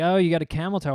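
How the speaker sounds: ordinary talk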